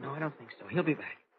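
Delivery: hushed whisper. Watching a suspect on a train with a companion: whispering. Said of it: "at least we can stop whispering".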